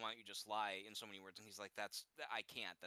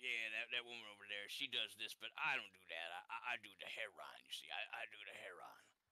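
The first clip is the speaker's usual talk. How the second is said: gruff, rough down-and-out street man voice. Speaker imitates how a man they describe talked, in a gruff voice. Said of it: "he kind of talked like this".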